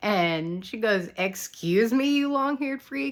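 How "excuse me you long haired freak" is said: mock sassy tone, pitched up. Retelling a scene where Erica answers Eddie: imitating Erica's sassy retort. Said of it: "responds to him with such sass".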